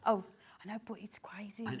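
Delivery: whispering. Presenting products on air with a co-host, answering in a whisper. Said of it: "why are you whispering?".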